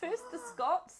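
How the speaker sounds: high, loud, shouted exaggerated German accent.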